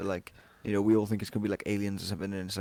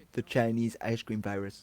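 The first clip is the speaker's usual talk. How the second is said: put-on Indian-sounding accent; 2 semitones higher than usual. Imitating Donald Trump saying a phrase: sounding like an Indian accent. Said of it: "It went like Indian".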